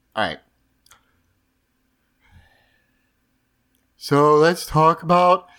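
very sad, gloomy donkey voice. Asked by co-hosts to be sadder, talking in a sad Eeyore voice. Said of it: "What is this voice you're doing?".

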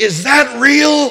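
very high, loud yell. Retelling how a man yelled across a parking lot, pointing to a cross, retelling a yell. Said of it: "he yelled".

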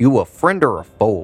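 plain

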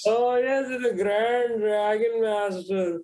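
put-on Indian accent. Reminding a friend how they used to name KKK titles; Indian accent. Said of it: "but like in an Indian accent".

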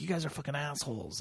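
yelling. Retelling how a guy yelled at the cops: imitating someone yelling. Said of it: "the guy was just yelling at the cops".

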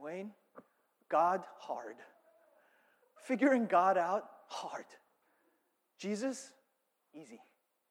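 put-on Korean accent. Quoting his dad's answer about God, imitating his dad's Korean accent. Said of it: "My dad said in his Korean accent".

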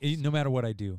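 ordinary talk, nothing marked

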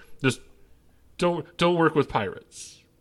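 stressed-out, frazzled, at wit's end. As the second character, looking right at you, stressed out. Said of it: "you sound stressed out".

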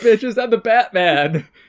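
loud, high-pitched shout.

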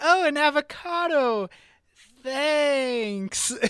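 very high, very slow, utterly let-down tone. Retelling a kid's reaction to a prank christmas present; mock-disappointed. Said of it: "the way he says it ... captures the essence of like, thanks ... absolute disappointment".

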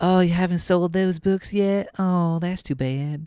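slow, high-pitched southern drawl. Describing an overdubbed Italian guy in a clip, doing a Zack Galifianakis southern accent. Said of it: "It's like a like a Zack Galifianakis southern accent".

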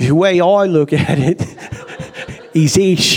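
put-on British accent. Quoting what a cab driver once said to his passenger: British accent. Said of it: "do the quote in a British accent".

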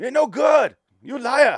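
put-on heavy, very high, very loud, slow broken-English accent. Retelling a movie scene, imitating the actor's broken-English accent. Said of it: "the exact impersonation".

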